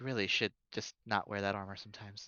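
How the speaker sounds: soft, hushed, private-sounding half-whisper. Half-whispering a warning in character to another player's character: half-whispering. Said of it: "I whisper to Kelsier".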